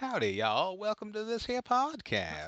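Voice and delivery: very high-pitched, put-on Southern accent. Co-hosts having a Southern-accent contest, one doing their best Southern accent. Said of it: "That's my best Southern accent".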